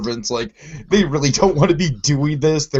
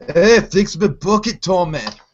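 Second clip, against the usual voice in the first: fake, put-on drunk accent, high pitch; 6 semitones higher, 4 dB louder than usual. Retelling a man calling to tommy the bartender; put-on accent. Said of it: "I don't know why I'm doing that accent".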